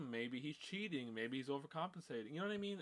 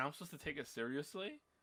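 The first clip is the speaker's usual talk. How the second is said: ordinary talk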